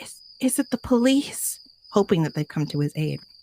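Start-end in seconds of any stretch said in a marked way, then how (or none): 0.0-1.6 put-on trembling, shaky, high, slow stammer. Narrating a story, voicing a man at a cracked-open door in a shaky voice. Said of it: "he says in a shaky voice".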